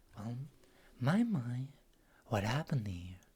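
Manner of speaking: smooth, alluring, sultry, velvety woman's voice. Narrating a story as a woman steps in to welcome you, sultry, velvety woman's voice. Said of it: "beautiful, sultry, velvety voice welcome you in and say".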